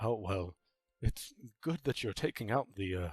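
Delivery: whispering in a character voice. Voicing villagers who start whispering about the party's job: whispering in character. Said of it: "start whispering, and they say".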